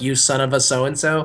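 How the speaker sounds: normal talking voice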